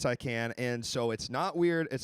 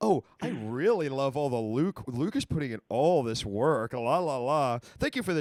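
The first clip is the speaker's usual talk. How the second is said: exaggerated sarcasm, very slow drawl. Showing chat how a remark about Luke sounded: imitating a sarcastic tone. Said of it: "really sounds sarcastic the way you said that. ... here's how it sounded".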